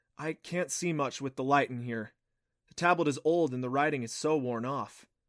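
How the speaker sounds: ordinary delivery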